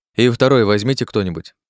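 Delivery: plain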